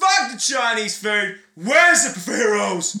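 loud, very high, full-voiced shout. Speaker shows a friend how to say the line: nice and loud, not screaming. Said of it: "say it with your voice".

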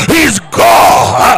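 down south delivery. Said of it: "say it like down south".

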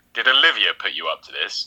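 ordinary delivery

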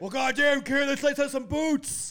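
very high, loud hollered delivery. Imagining what a wrestler would say at a match: Stone Cold impression. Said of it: "Stone Cold be like".

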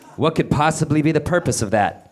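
plain reading voice

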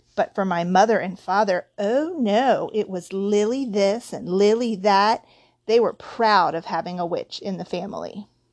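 plain

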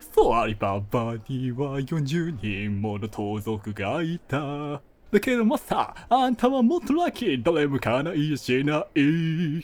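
loud, belted cartoon voice with pitch swooping all over. Asked to finish with an impression, the speaker does a Genie impression. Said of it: "ジーニーのものまねして締めてください".

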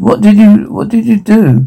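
soft chuckle. A character asks another what they did, chuckling.

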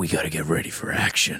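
low, deep, full-on superhero voice. Showing how an actor delivers every line of his character, in a Batman voice. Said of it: "He went full Batman".

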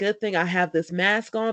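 ordinary talk

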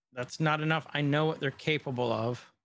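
usual speaking voice

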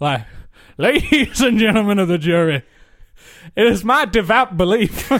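loud, put-on, grandstanding Southern lawyer accent. Giving the case against noise to a pretend jury, as a bourbon-swilling southern lawyer. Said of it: "this kind of bourbon swilling southern lawyer".

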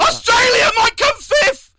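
very high-pitched, frenzied, frantic commentator shouting outburst. Contrasting calm, collected commentary, a line shouted with frantic excitement. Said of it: "Not like, ... that level of vigour I just received there that's scary".

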